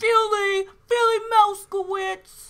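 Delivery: big, very high, very loud belted shout. Suggesting a Fievel nickname, doing a Tony impression. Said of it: "That's my Tony impression".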